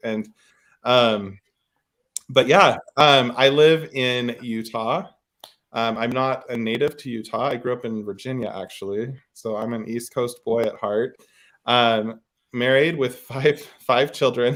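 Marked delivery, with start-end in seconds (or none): 12.5-14.6 giggles breaking in, laughing through the words. Introducing oneself and family to the other speaker, laughing while talking. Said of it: "I can't say that without laughing".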